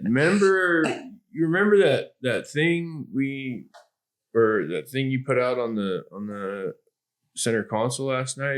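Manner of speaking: put-on casual, playing-it-cool tone. Retelling a phone call, beating around the bush: imitating acting casual. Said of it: "Trying to act cool about it".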